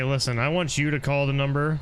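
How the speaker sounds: ordinary talk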